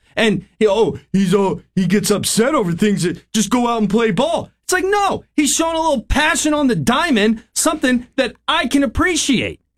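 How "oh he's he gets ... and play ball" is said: mocking put-on voice, higher pitch. Mocking a co-host's complaint about a player: imitating Craig. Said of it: "When you started imitating me again".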